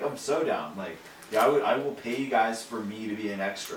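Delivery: plain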